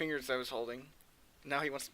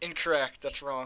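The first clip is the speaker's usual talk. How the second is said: ordinary delivery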